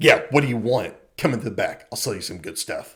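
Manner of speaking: put-on mean voice. Retelling a puppet cheesemaker dropping his accent: Bjornsson turning mean. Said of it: "he immediately cuts it and just turns mean".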